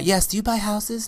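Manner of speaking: light fairy-like woman's voice. Role-playing a caller answering an ad about buying houses, in a little womanly voice. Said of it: "I'm gonna do like even like a little womanly voice".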